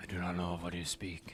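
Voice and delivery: growling voice. In a game scene, the voice from a vision answers the player, growling again. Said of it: "again growling to you".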